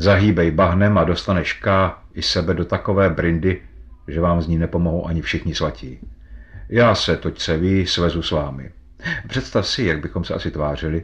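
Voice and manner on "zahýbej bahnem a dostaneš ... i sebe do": usual speaking voice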